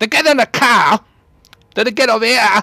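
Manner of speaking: heavy Cockney accent, loud and high. Showing how a Cockney person talks, heavy Cockney accent. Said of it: "heavy Cockney accent".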